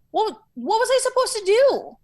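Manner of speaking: pleading, very high inflection. Retelling own reaction when the scene partner walked out: retelling own pleading line, higher inflection. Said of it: "my inflection got higher because I'm pleading".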